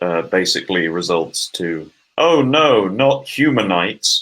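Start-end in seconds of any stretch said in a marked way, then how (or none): 2.2-4.2 slow, high, deadpan sarcastic mock dismay. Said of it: "he words in such a deadpan way".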